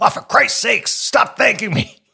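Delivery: very high, cranky, grumpy dad grumbling voice. Retelling how Dad reacted to repeated thanks: imitating grumpy Dad. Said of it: "he was grumpy all day".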